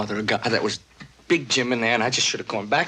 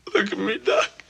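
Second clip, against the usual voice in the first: put-on high, sobbing, crying like a little kid; 6 semitones higher than usual. Speaking to Doc after a loved one's death, crying like a little kid. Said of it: "I'm crying just like a little kid".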